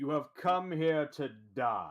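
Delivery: steady, far-carrying, very loud, booming and calm. In a role-play, a character magically amplifies the voice for everyone: booming, calm voice. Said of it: "a booming, calm uh, outreach".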